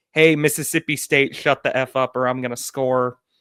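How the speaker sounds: normal talking voice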